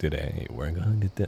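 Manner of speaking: thick creaky vocal fry through every word. Trying to copy a narrator's voice: imitating a man's vocal fry. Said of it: "he has so much vocal fry going on".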